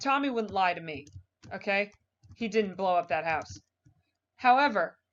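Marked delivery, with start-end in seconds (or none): none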